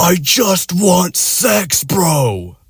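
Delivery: put-on very slow, drawn-out, high ogre scream. Retelling how a guy suddenly turned and screamed at him, ogre yell. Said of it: "screams like with this ogre yell".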